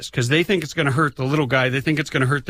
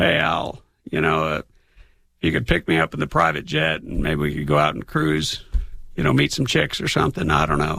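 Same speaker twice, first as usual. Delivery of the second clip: put-on hoarse, scratchy, rough, creaky voice; 9 semitones lower than usual. Speaker says he can do Al Gore's buddy: Bill Clinton impression. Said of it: "I can do his buddy, uh, Bill Clinton".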